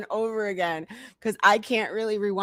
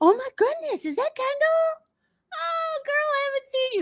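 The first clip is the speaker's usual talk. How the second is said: very high, overfamiliar, gushing voice. Mocking how she acts like she's friends with Kendall: imitating Heather gushing. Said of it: "She's saying it as if she's friends with Kendall".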